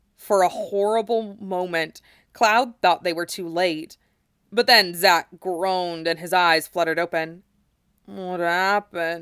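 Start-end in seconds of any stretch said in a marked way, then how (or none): 8.1-9.2 put-on congested, slurred mumbling. Zack, just coming to in the snow, asks Cloud, mumbled and slurred with cold. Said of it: "Zack mumbled, his words slurred with cold".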